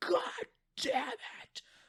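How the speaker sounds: hushed, breathy, exasperated whisper under the breath. Retelling a player failing a hard level: imitating Aaron screaming. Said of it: "him screaming".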